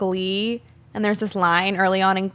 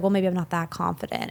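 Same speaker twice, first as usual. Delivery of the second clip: put-on vulnerable tone, quieter; 3 semitones lower, 5 dB quieter than usual. Retelling a scene from Glee, imitating a vulnerable tone. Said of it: "he says very vulnerably".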